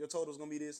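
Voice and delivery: ordinary talk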